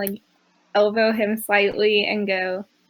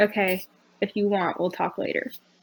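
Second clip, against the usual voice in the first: soft voice, brought right down low; 5 dB quieter than usual. Retelling how she responds in a caring way, with a lowered voice. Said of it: "lowers her voice and goes".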